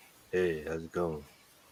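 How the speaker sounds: voice deliberately pushed down into a put-on deep voice. Trying out a different way of talking after disliking own recorded voice: put-on deeper voice. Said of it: "Maybe I should talk deeper".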